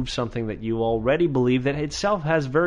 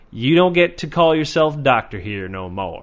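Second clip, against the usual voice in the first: put-on Texan accent with a drawl; 4 dB louder than usual. Scolding a doctor who endangered people's lives, in a texan accent. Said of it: "I don't know why I sound like a Texan when I say that".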